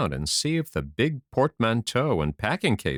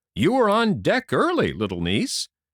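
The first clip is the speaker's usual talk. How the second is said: hearty, jovial, bluff, cheery tone, pitched up; 7 semitones higher, 4 dB louder than usual. A narrator reads an uncle calling out to his niece in a bluff, cheery voice. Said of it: "called out in a bluff, cheery voice".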